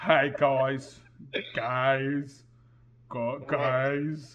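put-on loud, very slow American accent, Australian showing, "guys" stretched. Imitating Chris Hemsworth attempting an American accent: Chris Hemsworth doing an American accent. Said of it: "I'm trying to do a Chris Hemsworth doing an American accent".

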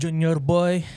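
high, loud put-on Filipino auntie accent. Imitating a Filipino aunt calling Junior, in a Filipino aunt voice. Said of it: "in a Filipino aunt voice".

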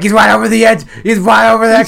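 shrill, frantic, full-throated, rattled-off panicked scream. Recounting how the listener screamed during a drunken night, imitating panicked screaming. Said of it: "the panic in your voice as you were screaming".

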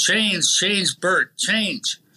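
drawn-out high call. Recounting yelling at a player from the top of the press box, retelling a yell. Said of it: "we're yelling".

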